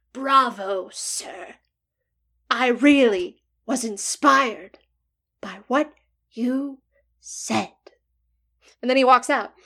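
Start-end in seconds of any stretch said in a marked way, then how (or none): 0.2-7.7 very slow, lurking, shadowy voice. Retelling a support group meeting, a figure at the back speaks up; imitating a shadowy figure. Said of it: "let me see if I can imitate it".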